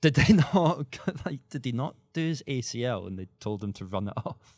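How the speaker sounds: slow speech broken up by laughter. Joking about an injured player told to run it off, laughing while talking. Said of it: "Why are you laughing at that?".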